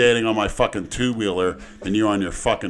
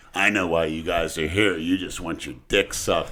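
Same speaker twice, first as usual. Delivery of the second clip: put-on low old man voice, talking tough; 5 semitones lower, 3 dB quieter than usual. Retelling how an 80-year-old man approached the group, imitating his tough-guy talk. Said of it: "tried to talk like a tough guy".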